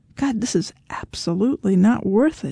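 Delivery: ordinary delivery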